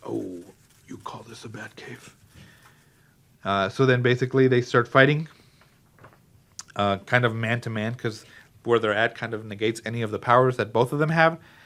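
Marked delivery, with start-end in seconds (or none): 0.0-2.1 hushed, breathy near-whisper hero voice. Speaker recapping a clip quotes Batman's entrance, Batman voice. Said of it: "I'm gonna say it in my Batman voice".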